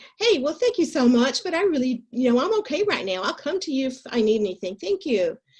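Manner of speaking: put-on thick Southern accent. Replying to someone who asks if they can help, in my strongest Southern accent. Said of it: "I drum up my deepest Southern accent".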